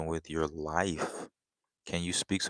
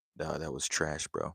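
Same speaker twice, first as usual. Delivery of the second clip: plain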